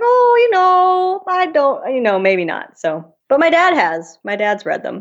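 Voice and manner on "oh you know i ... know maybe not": very high, lilting, sing-song put-on Minnesota accent. Speaker quotes a woman, imitating her Minnesota accent. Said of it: "in that Minnesota accent".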